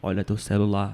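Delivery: very deep, low godlike voice. Retelling what God told him after he pocketed his phone, voice of God. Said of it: "gostei da voz de Deus".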